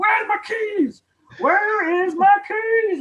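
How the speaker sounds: play-acted very high, loud, drawn-out screaming. Retelling how a brother searched for keys at dawn: imitating someone screaming. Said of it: "he'd be screaming".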